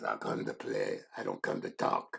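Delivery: rough, gravelly, hushed near-whisper. Retelling a man's reply to him, imitating a gravelly voice. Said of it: "He had really gravelly voice".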